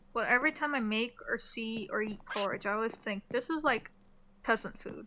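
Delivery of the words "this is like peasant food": usual speaking voice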